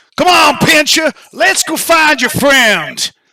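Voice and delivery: booming voice pitched high. A voice calls out somewhere in the mansion: Lord Outhwaite's booming voice. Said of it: "booming voice of Lord Outhwaite".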